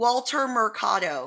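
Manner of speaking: Americanized, anglicized pronunciation of a name. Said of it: "or I can just say it, like, Gringanized".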